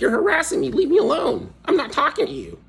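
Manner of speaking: very high, swooping put-on nerd voice. Retelling telling someone off, said in a nerdy voice. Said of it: "I said it in a nerdy voice".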